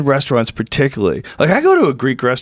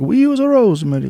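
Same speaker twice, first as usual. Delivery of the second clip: put-on Italian accent, higher; 6 semitones higher than usual. Retelling what a cook at an Italian restaurant said: imitating an Italian accent. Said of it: "the dude talks like that".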